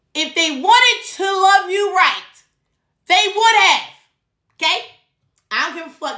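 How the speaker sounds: high-pitched yelling. Telling viewers a hard truth they need to hear, yelling at the screen. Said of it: "Guess I'm yelling at the screen".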